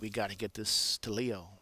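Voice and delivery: ordinary talk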